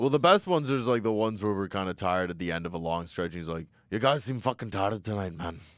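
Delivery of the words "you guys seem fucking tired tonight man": put-on old Scottish man voice. Retelling what a man who follows them to shows said; imitating Tony, old Scottish man. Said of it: "some s- old Scottish man".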